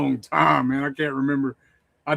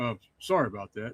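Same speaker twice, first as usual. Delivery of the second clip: put-on soft-spoken apologetic voice, lower and quieter; 3 semitones lower, 10 dB quieter than usual. Retelling a savage film character's apology at the end: soft-spoken Michael Berryman imitation. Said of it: "he's all soft-spoken".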